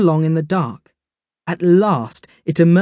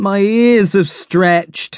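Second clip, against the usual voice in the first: groaning, slower; 2 semitones higher than usual. Reading one character's complaint to the others, groaned. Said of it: "Barnaby groaned".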